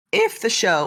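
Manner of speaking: voice cracking and breaking. Answering a question about the show's future, voice cracking. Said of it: "voice crack again".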